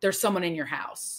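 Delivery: put-on scary, creepy male voice. Retelling a horror film scene where a voice speaks: imitating a scary male voice. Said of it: "it was this scary male voice".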